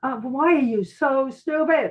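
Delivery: shouting. Describing watching a commercial, acting out yelling at the tv. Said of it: "I'm yelling at the T V and going".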